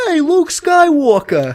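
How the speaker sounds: put-on very high, loud, swooping New York accent. Acting out a passerby on the street calling to an actor: imitating a New York accent. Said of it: "I made him from New York".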